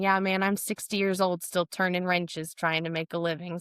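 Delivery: ordinary delivery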